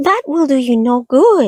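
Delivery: tiny, high, squeaky little voice. Reading a story aloud, a voice in the dark speaks: high squeaky voice. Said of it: "said a high, squeaky voice".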